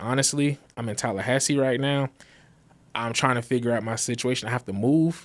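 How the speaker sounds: usual speaking voice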